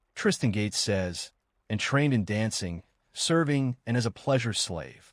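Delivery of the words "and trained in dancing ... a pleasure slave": ordinary talk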